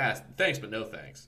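normal talking voice

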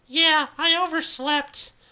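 shrill, very high, very loud whining. Narrator reads Yui, late for school, answering Alex; whiny. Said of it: "Yui whines".

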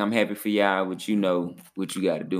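ordinary delivery

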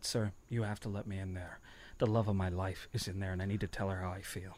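low, earnest, heartfelt, sincere, utterly convincing tone. Speaker retelling what he said to the man at the front of the line, reenacting a convincing plea. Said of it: "I completely convincingly said".

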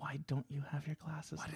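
quiet, hushed voice. Retelling what they kept asking during the movie: whispering. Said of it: "Why are we whispering?".

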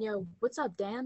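mock-casual jokey tone. Recalling a visit to their old school with a friend; retelling a joking greeting. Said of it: "we jokingly went".

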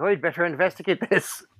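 nineteen-twenties Irish policeman brogue. Picturing an old 1920s cop hearing kids scream, in an old Irish cop accent. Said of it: "That is a surprisingly good Irish accent".

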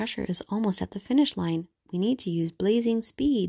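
usual speaking voice

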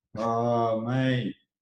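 glum, unenthused, dragging, reluctant tone. Answering that it is their turn to go first again: sounding unenthusiastic. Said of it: "Don't sound too happy".

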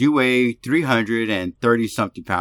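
normal talking voice

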